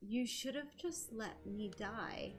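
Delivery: whispered. Retelling a scene where Rayla speaks to him, whispering Rayla's line. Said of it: "after she kind of whispers like that".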